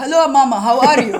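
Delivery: English spoken with a loud put-on Arabic accent. Retelling how the speaker greets their mom in front of friends, put-on Arabic accent. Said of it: "I would start talking like an like an Arabic accent".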